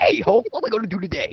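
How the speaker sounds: high cartoon donkey voice. Joking that Donkey shows up and talks to Hulk: Eddie Murphy impression as Donkey. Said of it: "that's my Eddie Murphy impression".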